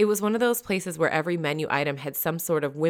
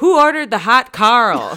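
very loud, booming, pitched-up bellow; 6 semitones higher, 12 dB louder than usual. Narrator reads a staff member bursting from the kitchen calling to the dining room, bellowing across the room. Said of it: "bellows through the entire dining room".

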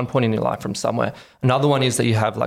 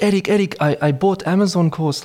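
heavy put-on European accent, pitched up; 7 semitones higher than usual. Retelling what their mum said in her home office, thick European accent. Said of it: "in a thick European accent".

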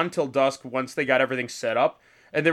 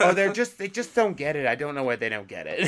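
patronizing, condescending, know-it-all, talking-down tone. Mimicking what a condescending person would say, in a mock condescending tone.

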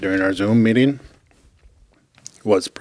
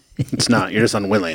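ordinary delivery

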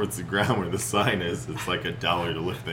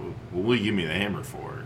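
ordinary delivery

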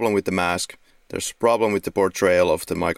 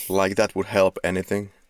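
usual speaking voice

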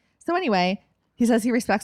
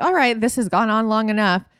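ordinary talk, nothing marked

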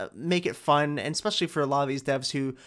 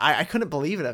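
normal talking voice

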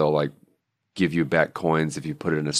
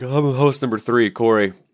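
yawning speech, stretched, pitched up and loud; 8 semitones higher, 6 dB louder than usual. Third podcast host gives their intro at the episode start, yawning while talking. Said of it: "I'm yawning".

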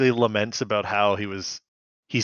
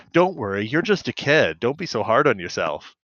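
ordinary talk, nothing marked

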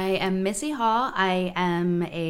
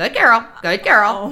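very loud, mocking tone with mimicked inflections; 3 semitones higher, 11 dB louder than usual. Retelling how a neighbor mocks a husband's inflections: mocking a husband's inflections. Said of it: "mocks my husband's inflections".

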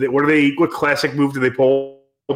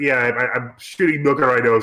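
ordinary talk, nothing marked

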